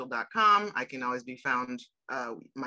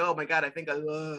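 put-on vulnerable tone. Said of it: "he goes to, like, vulnerable".

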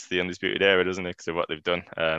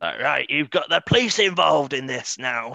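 put-on anger, much higher pitch; 8 semitones higher, 3 dB louder than usual. Recapping an episode, quoting a character fuming at someone, retelling an angry outburst. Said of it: "he's angry from the off".

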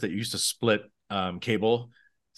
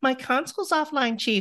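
very high put-on woman's voice in falsetto; 14 semitones higher than usual. Recounting another actor's access-tunnel monologue, doing his falsetto female voice. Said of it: "he does that falsetto female voice".

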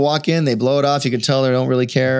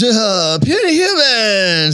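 surfer-dude alien voice, much higher; 9 semitones higher, 4 dB louder than usual. Recalling a voice actor walking in to voice an alien character, in a Mark Chang surfer-dude voice. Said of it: "this surfer dude".

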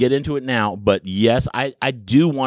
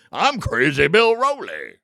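sing-song car salesman patter; 5 semitones higher than usual. Joking that a former coach's name sounds like a car salesman's, in a car salesman voice. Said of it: "or a car salesman".

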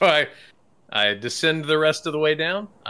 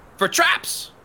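very high-pitched goblin-like creature voice. Answering a suspicious goblin guard while playing a character: goblin-y voice. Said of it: "I'll say it in a goblin-y".

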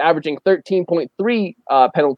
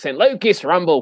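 bad, terrible, fake put-on Australian accent. Mimicking something announcing the name, in a terrible Australian accent. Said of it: "Australian accent".

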